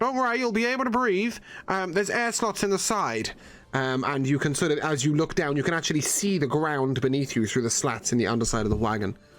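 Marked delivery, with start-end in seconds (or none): 0.0-3.3 muffled voice, higher. Narrator voicing a man speaking through wood over a wagon, muffled voice. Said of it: "you hear this muffled voice going".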